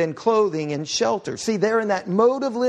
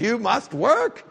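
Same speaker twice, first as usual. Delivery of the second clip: put-on German-accented delivery. Quoting a colleague who says this line in German accent: imitating a German accent. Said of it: "in a German accent several times".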